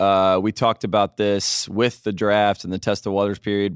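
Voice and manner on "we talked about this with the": usual speaking voice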